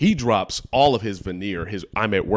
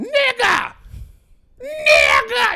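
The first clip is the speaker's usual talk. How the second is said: very high, shrill, exasperated shouting; 7 dB louder than usual. Retelling a woman yelling at him, retelling a yell, Stink Meaner style. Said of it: "She's yelling it at me".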